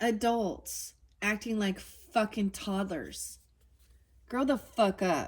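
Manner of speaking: fed-up, exasperated venting with swearing. Complaining about people who burned down their own city, frustrated. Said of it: "I'm getting I'm getting frustrated".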